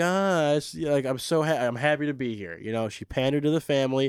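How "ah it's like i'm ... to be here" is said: ditzy, scatterbrained, airheaded gushing chatter. Mocking a contestant's typical moment: imitating a ditzy young woman. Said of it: "like, ditzy, like".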